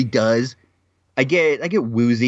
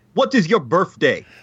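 terrible put-on Russian accent, pitched up; 5 semitones higher than usual. Asking Kevin what his birthday is, in a bad Russian accent. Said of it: "My Russian accent is so bad".

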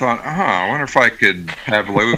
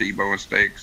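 ordinary talk, nothing marked

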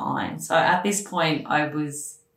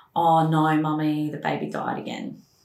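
usual speaking voice

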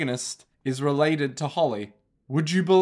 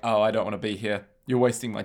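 mock bored lawyer voice, much lower pitch; 6 semitones lower than usual. Describing a lawyer character from an episode, imitating a bored lawyer. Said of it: "the lawyer has such a bored voice".

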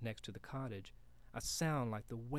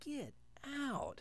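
very high, soft, hushed half-whisper; 9 dB quieter than usual. After a face vanishes from the tree, Paolo urges the other boy out, half-whispered. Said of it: "Paolo whispered".

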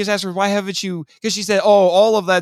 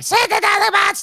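put-on shrill yelling, pitched way up; 14 semitones higher than usual. Recapping a story, the speaker acts out a woman yelling at her minions: imitating someone yelling. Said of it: "smacking her minions around and yelling at them".

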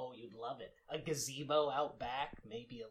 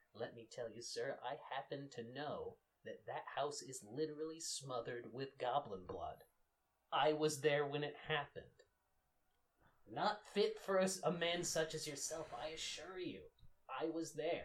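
lowered, confiding, secretive hushed voice. A role-play character speaking to a man he calls sir: lowered voice, sharing a secret. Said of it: "I lower my voice as though sharing a secret".

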